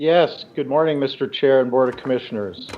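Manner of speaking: soft, barely carrying, too-quiet voice. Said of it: "Use your outside voice".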